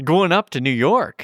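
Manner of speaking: put-on Canadian accent. Asked to say it in a Canadian accent, the speaker tries again: Canadian accent. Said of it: "I need you to say that in a Canadian accent".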